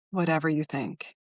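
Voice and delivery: put-on low mutter. Retelling her own nervous reply: retelling a line said under the breath. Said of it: "I just said under my breath".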